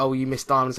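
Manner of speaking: usual speaking voice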